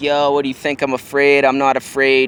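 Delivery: ordinary delivery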